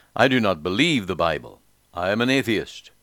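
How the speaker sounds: ordinary delivery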